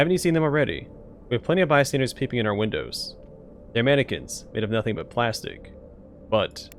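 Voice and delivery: ordinary talk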